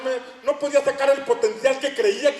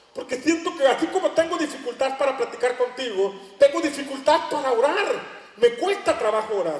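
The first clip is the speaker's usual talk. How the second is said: usual speaking voice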